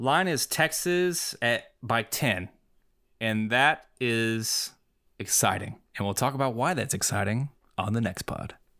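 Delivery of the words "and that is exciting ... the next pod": ominous, movie-trailer announcer voice. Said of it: "That was really ominous voice there".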